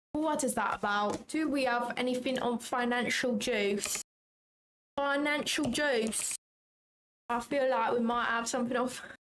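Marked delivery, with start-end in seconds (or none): 5.0-6.4 put-on London Cockney accent. Saying a phrase in an accent for a laugh: put-on Cockney accent. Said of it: "I feel like I'm quite good at that accent".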